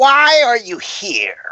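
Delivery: spooky, haunting, eerie, high female voice. Describing a scene to the players, the speaker voices an unseen woman, eerie woman's voice. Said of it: "you hear a really eerie woman's voice".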